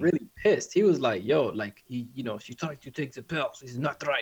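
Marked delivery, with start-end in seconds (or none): 1.2-4.2 put-on Russian accent, slower. Retelling what an angry Eastern European man said, imitating a Russian accent. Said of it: "He had like a Russian kind of accent".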